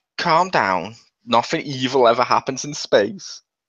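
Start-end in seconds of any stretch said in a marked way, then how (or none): none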